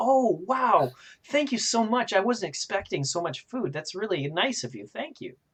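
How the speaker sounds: very high, swooping, overjoyed excitement. Game narrator voicing a woman thanked with food by a player, super excited. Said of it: "she's super excited".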